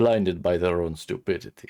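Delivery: Transylvanian mad-scientist accent. Speaker trying out the mad-scientist stereotype voice, Transylvanian mad-scientist accent. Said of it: "I'm going Transylvanian".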